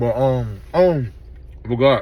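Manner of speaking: speaking with a full mouth, chewing. Eating on camera while talking to viewers, talking with mouth full. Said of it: "my mouth full".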